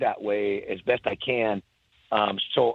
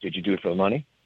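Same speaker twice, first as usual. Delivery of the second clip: put-on very serious, grave tone, lower pitch; 5 semitones lower than usual. Retelling how he got really serious again and asked: imitating a very serious tone. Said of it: "he gets really serious again".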